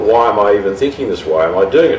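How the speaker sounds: ordinary delivery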